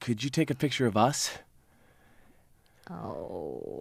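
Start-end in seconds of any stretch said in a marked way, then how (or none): 0.0-1.3 mock stammer, pitched much higher. Retelling how a man came over asking for a picture, imitating someone stammering. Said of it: "he just like stammered over to me".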